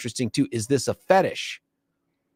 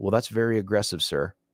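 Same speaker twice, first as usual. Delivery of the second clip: usual speaking voice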